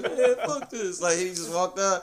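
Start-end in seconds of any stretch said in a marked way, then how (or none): 0.0-1.0 put-on high, trembling, quivering, near-crying voice. Retelling a classmate walking out of a grilling, imitating a quivering voice. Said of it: "they had that quiver in the voice".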